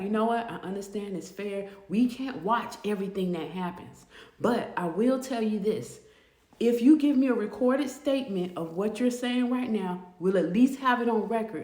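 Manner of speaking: ordinary delivery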